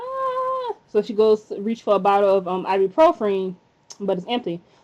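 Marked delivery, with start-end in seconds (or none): 0.0-0.7 high-pitched mock scream. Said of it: "she was in bed screaming".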